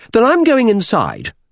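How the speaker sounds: heated, angry, very high-pitched. Reading a woman's line in a story, answering the man, said angrily. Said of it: "she said angrily".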